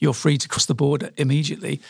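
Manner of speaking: ordinary talk, nothing marked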